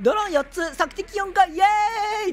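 high, loud, smug gloating cheer.

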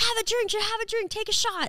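insistent, pushy delivery.

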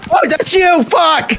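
startled, high shriek.

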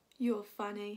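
plain

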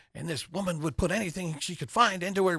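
bad, clumsy, terrible put-on Irish accent, pitched high. Retelling an Irishman's phone review of Poor Things: terrible Irish accent. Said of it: "I'm going to do a terrible Irish accent".

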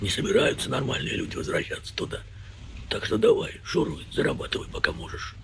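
rough, creaky, offhand, dismissive voice. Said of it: "сказала таким голосом".

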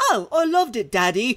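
put-on high, slow, prim and proper British boy voice. Imagining a young British son answering his father: prim, proper British young son. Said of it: "how I imagine the discussions in a prim, proper British family".

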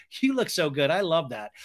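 ordinary talk, nothing marked

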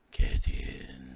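very low, deep, loud hissing zombie voice. Game master voicing a zombie on a carriage, speaking to a player, hissing zombie voice. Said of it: "a zombie kind of hisses at you".

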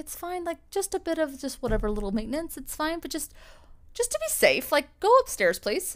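mock easygoing calm. Retelling how crew woke first and second class passengers: imitating calm crew member. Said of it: "and they were so calm".

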